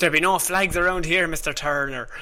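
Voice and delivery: put-on pirate captain voice. In a pirate bit between two speakers, one does a Captain Barbossa impression. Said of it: "You you can do it much better than I can".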